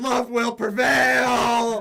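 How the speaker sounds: shrill, very loud, high battle cry, "prevail" stretched. Attacking a manservant with a rapier in a game, yelling a battle cry. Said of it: "I'll just yell at him as I'm doing that".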